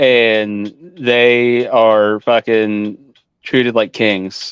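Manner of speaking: slow, drawn-out emphasis on fucking treated like kings.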